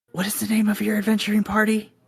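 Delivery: hushed whisper. Game master voicing the prince, asking the players an aside: whispering. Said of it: "he kind of whispers to you guys".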